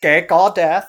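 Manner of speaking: shrill, very loud, blasting robot voice. The speaker repeats a question and it comes out in a Dalek voice. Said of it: "it sounded like a Dalek when I said that".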